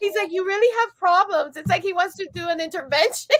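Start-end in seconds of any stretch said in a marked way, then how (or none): 0.3-1.6 mock heartfelt, sentimental, earnest concerned tone. A mother quotes her son about her bags, imitating his sentimental tone. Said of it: "he says it so sentimentally".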